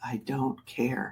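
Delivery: put-on soft, dead-flat, uncaring kid deadpan. Retelling what a little boy once said back to them, in a mock deadpan voice. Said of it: "and in a deadpan voice".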